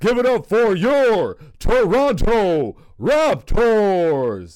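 very loud, booming arena hype, one word stretched and swooping. Show exactly how the guy announces the team, as a Toronto Raptors announcer impression. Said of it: "That's exactly how the guy says it".

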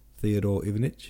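plain reading voice

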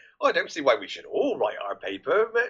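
ordinary delivery

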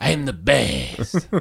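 high, creaky, rough cartoon-cat hero voice. Asked to do the cat from the film, the speaker does a Puss in Boots voice. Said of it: "Do your Puss in Boots voice".

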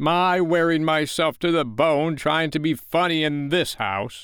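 resentful, aggrieved outburst. George speaks while Wendy hugs Nana and his wife comforts the boys, bitter. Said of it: "he said bitterly".

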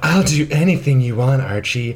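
put-on over-keen, thirsty, eager tone. Retelling a scene, quoting Cheryl offering Archie anything: imitating Cheryl, thirsty. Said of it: "a thirsty ass thought in this scene".

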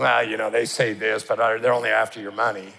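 mock snide, knowing, dismissive sarcasm. Acting out a critic who sneers at the preaching: imitating sarcastic Elymas. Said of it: "sarcastically criticizing".

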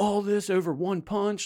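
protesting yell, high and drawn out. Telling a story, the speaker acts out a drunk man coming out, retelling someone yelling. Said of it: "He comes out and he's like yelling".

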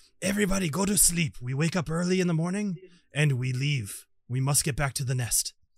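loud yelling, projected far. Game narrator voicing a character calling over to the rest of the group, yelling. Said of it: "he yells over to the rest of the group".

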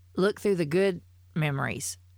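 normal talking voice

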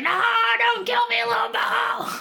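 very high, loud, panicked screaming.

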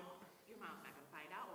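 ordinary talk

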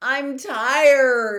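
very loud, high, tired, drawn-out bellow. A narrator reads a character finally speaking up after nearly half an hour, bellowing. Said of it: "he bellowed finally".

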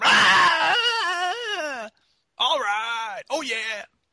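very high, drawn-out stage shout with the ah stretched. Acting out Dane Cook getting on stage, in a Dane Cook impression. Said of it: "that's my impression of Dane Cook".

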